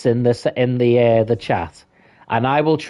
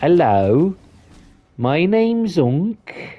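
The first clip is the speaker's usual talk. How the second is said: Birmingham accent, very slowly drawn out; 6 semitones higher than usual. Demonstrating regional accents, introduces himself in a slow Birmingham accent. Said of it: "that would be more of a Birmingham accent".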